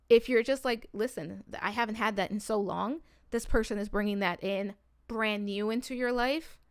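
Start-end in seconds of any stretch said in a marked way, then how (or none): none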